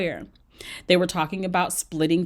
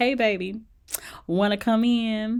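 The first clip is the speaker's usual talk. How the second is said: slow, sultry, breathy-style hotline voice; 4 semitones higher than usual. Retelling how Christine greeted her date at the door: imitating sultry voice. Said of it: "her one eight hundred sultry voice on".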